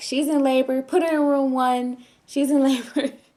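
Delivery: high, loud, laughing mock voice. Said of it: "all the nurses just bust out laughing".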